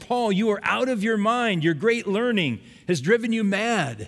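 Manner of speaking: loud, high calling shout. Retelling scripture, Festus calls out to Paul during his defense, in a loud voice. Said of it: "Festus said with a loud voice".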